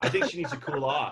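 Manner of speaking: acted breezy, casual offhand delivery. Imitating Carl spraying a woman with an extinguisher: casual Carl impression. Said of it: "can you do an impression of Carl spraying the woman".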